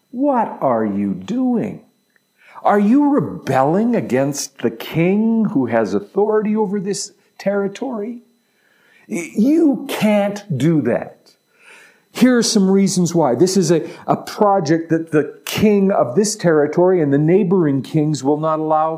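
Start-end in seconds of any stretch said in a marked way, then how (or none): 0.1-11.1 high, swooping, scornful, contemptuous sneer. Retelling how they reacted to the plan to rebuild Jerusalem's walls, acting out contemptuous scoffing. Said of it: "they scoffed contemptuously".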